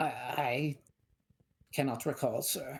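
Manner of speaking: nervous, slow, hesitant stuttering. Player's dwarf sergeant answers a questioning officer, nervous and stuttering. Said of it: "And you can see he wasn't expecting a dwarf. / He's nervous. / [name], / He's stuttering. / He's nervous".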